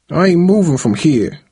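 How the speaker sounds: sullen, sulky tone. A student refuses the teacher's request to move seats, sullen. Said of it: "Tyrae said in a sullen voice".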